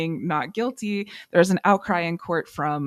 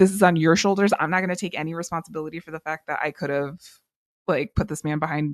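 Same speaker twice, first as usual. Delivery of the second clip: ordinary talk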